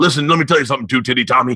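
fast wrestling-promo style voice. Speaker recalling phrases he borrowed from wrestling, doing a Hulk wrestling-promo impression. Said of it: "Hulk's got the same five phrases".

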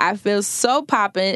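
ordinary delivery

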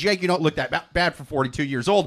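normal talking voice

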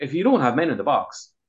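ordinary talk, nothing marked

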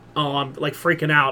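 ordinary talk

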